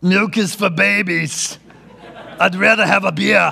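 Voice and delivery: slow, rough, creaky, dragged-out muscleman drawl. Quoting an interview answer about milk: Arnold Schwarzenegger impression. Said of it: "That's a great Arnold Schwarzenegger impression".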